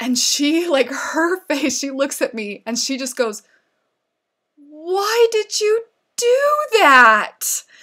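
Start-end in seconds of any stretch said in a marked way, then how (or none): 4.6-7.6 put-on very high-pitched, very slow, betrayed little-child voice. Retelling a four-year-old's reply after a confession, imitating a betrayed sad four-year-old. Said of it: "betrayed, saddest little three-year-old voice".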